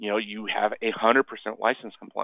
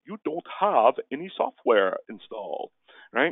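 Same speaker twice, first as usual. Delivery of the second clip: attempted British accent; 4 semitones higher than usual. Quoting a perplexed report about missing software: his best put-on British accent. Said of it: "in his best British accent, I'm going to try and be British".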